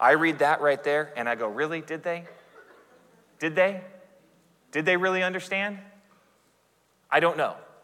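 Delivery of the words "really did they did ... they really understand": mock sarcastic, cynical doubtful tone, higher. Retelling own reaction on reading the verse: retelling own sarcastic reaction. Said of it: "because I'm a little bit cynical and probably more sarcastic".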